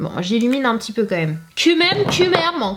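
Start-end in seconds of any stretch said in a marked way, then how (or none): 1.5-2.8 put-on slight Portuguese accent, much higher in pitch. Talking to viewers, with a slight Portuguese accent. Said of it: "j'ai un peu fait l'accent portugais".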